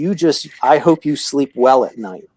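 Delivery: plain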